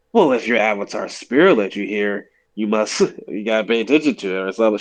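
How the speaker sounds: put-on sarcastic character voice. Retelling a show scene where Toph wakes up, mock-snarky Toph voice. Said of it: "Toph like snarkily says like".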